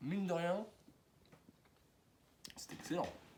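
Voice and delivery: talking with mouth full. Speaker tasting a baguette on video comments mid-bite: talking with mouth full. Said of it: "je parle la bouche pleine".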